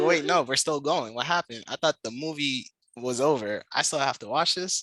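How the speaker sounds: ordinary delivery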